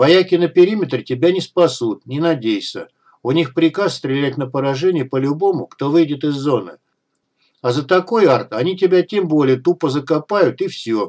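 plain

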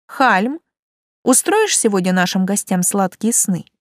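plain reading voice

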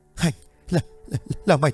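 halting, choking voice. A terrified, trembling person forces out words, choked and broken. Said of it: "chỉ có thể thốt ra những từ nghẹn ngắt quãng".

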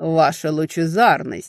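sneering mocking tone. The prince greets Fiara with a mock bow, full of venomous mockery. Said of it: "полное ядовитой насмешки приветствия".

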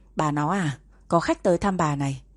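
ordinary talk

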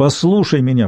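usual speaking voice

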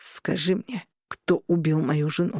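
through clenched teeth. Cornelius, in mourning, questions Forsberg, speaking through gritted teeth. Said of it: "процедил сквозь зубы Корнелиус".

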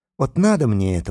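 ordinary delivery, nothing marked

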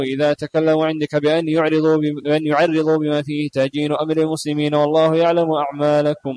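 normal talking voice

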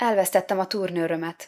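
usual speaking voice

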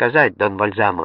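plain reading voice

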